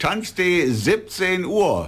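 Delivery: slow, high, drawn-out, emphatic delivery, spelled out.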